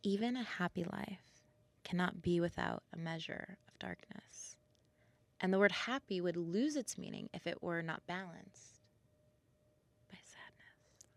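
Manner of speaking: really soothing, poetic reading voice. Reading a quote aloud on request, in a really soothing reading voice. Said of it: "do it in a really soothing voice".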